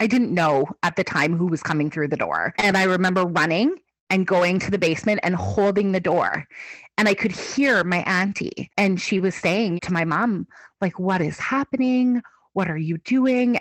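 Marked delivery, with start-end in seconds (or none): 11.0-13.6 scolding, laying into someone, confrontational tone. Retelling what the auntie said to mom: imitating someone laying into another. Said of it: "really kind of just laying into her".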